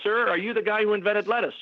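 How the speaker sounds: play-acted, very high, jeering shouted yell. Retelling calling out a question to a comedian from the audience: imitating own past yell. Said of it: "I'd yell at him".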